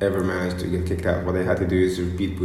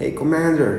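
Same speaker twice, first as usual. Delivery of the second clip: odd, very high-pitched weird voice; 9 semitones higher than usual. Retelling how Shoham answered the shouting commander at the base: Shoham's weird voice. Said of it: "in this weird voice".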